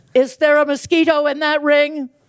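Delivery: mock blaring, very loud, high-pitched voice. On a subway, retelling a young man's question about an amber ring, imitating a very loud voice. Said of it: "in a very loud voice".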